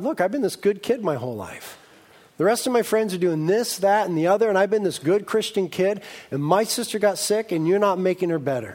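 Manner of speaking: ordinary delivery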